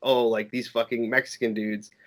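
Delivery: put-on sneering, snarky tone. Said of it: "very sneer and, like, snarky remarks".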